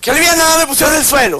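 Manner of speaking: mocking high-pitched whine.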